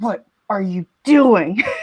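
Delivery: low, muttered under the breath. Walking through the audience to Quiver, muttered under the breath. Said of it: "I just say under my breath".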